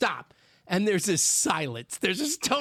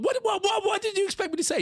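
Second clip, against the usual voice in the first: put-on angry tone, higher; 12 semitones higher than usual. Retelling his own reply to his wife about their son: imitating an angry retort. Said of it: "You go with anger".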